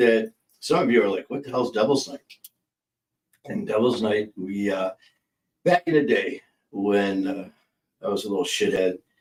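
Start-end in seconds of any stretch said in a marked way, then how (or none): none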